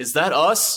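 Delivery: put-on very loud, high-pitched blurted outburst. Retelling a crying guy's outburst in a bar: imitating a loud outburst. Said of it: "really loud".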